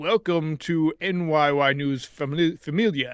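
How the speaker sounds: slow, theatrical, dramatic reading voice. Reading a donation message aloud in Derek Morpheus voice. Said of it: "Derek Morpheus voice".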